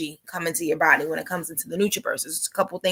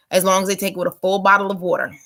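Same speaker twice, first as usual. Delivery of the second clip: plain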